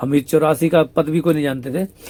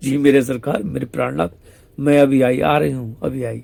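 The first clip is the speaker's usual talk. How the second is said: ordinary talk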